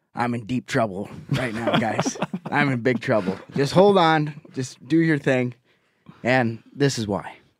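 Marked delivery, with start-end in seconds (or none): none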